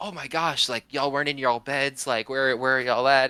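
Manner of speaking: mock alarmed, flustered, frantic voice, calling out loudly. Retelling mom finding the kids gone from their beds: imitating panicked mom. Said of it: "my mom comes out panicking".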